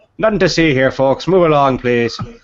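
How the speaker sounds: booming Irish beat cop.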